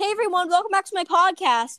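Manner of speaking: very loud announcer voice. Showing how obvious the podcast intro is: saying it very loudly. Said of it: "if I say very loudly".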